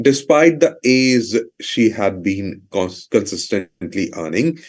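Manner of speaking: normal talking voice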